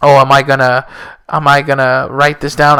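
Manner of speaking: ordinary talk, nothing marked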